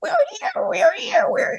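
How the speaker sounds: tiny, squeaky little voice, very high. Speaker acts out the little person in the clock tower: little clock-tower voice. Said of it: "the little voice going".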